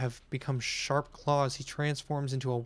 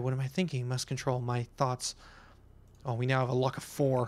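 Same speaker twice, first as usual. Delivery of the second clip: usual speaking voice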